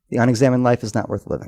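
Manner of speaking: normal talking voice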